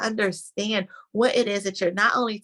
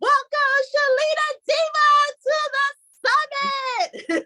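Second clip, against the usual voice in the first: very high, emphatic, showy game-show host announcer voice; 4 dB louder than usual. Host welcoming a guest to the summit, The Price Is Right announcer style. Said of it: "I say it with such emphasis".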